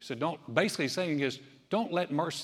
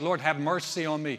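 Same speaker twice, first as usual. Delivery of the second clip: ordinary talk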